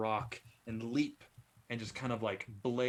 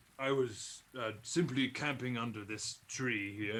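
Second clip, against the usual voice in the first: half-orc creature voice. Voicing a half-orc explaining how the beast attacked him: half-orc voice. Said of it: "and motions towards this large tree".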